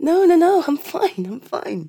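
speaking through tears. Assuring someone after watching a YouTube video, crying. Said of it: "I am crying".

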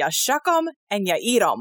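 put-on the most strongly American accent possible. Retelling how the man who gave them oysters answered; very american accent. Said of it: "in the like most American accent".

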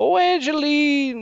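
very high, loud, belted character call. Recalling meeting Kevin and doing the movie character: Ray accent impression. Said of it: "was Ray from that movie and went".

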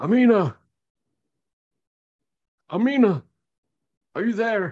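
very high voice barking out. Narrator voicing a lone voice in the night, barking out a call. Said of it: "a single voice sort of bark out".

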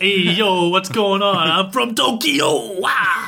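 put-on Long Island accent. Imitating a schoolmate after a question about the accent: put-on Long Island accent. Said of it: "from Long Island based on the accent".

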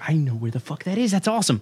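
excited, recognizing tone.

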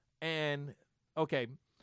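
plain

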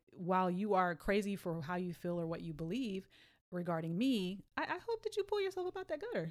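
ordinary talk

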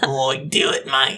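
put-on Australian accent. Voicing the destructive little devil on a shoulder: evil Steve Irwin voice. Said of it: "are they Australian?".

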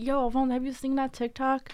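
put-on excited, pumped-up, hyped voice. Retelling asking someone about a video: imitating own hyped-up voice. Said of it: "mad amped".

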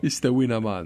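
mock, put-on Jamaican accent. Joking on a podcast about a cereal's cinnamon mascot, in a Jamaican accent. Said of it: "Was that a good accent?".

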